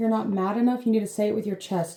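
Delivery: ordinary delivery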